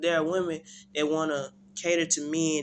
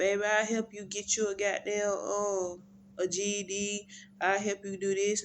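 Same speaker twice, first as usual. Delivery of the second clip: put-on soft, gentle, high-pitched girl's voice; 5 semitones higher than usual. Describing a girlfriend helping a man after prison, in a soft girl's voice. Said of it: "A girl with a soft voice".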